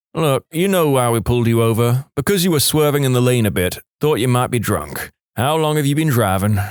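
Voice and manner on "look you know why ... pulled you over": ordinary delivery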